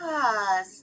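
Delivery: calm, easing, contented sigh on ah. Showing how a calming sound helps you relax, soft soothing ah. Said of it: "nice, soothing kind of thing".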